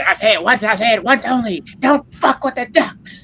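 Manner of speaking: shrill, very high, loud, slow and deliberate. Imitating how Steppo will come in after the game: imitating Steppo. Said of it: "Steppo's gonna come in there like".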